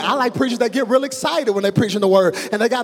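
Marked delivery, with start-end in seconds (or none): none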